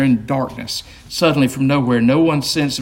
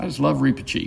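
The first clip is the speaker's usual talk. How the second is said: ordinary delivery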